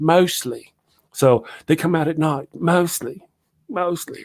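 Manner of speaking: put-on high, drawn-out, mostly slow English accent. Retelling how the actress who played Newt said a line, in Newt's English accent. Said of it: "starting to pick up an English accent".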